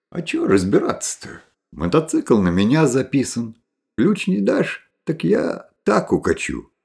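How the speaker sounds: plain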